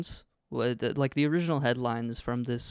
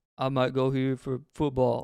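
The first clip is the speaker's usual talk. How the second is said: stiff, affected, put-on scripted line reading; 3 dB louder than usual. Retelling a video where Baby Gronk talks deeper on purpose: imitating Baby Gronk's deeper voice. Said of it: "talking in a deeper voice on purpose".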